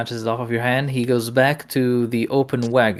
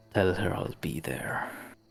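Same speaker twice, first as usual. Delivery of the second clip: breathy, hushed, whispered low growl; 5 semitones lower, 10 dB quieter than usual. Narrator voices a man walking back to a player and quietly growling. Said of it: "quietly growls".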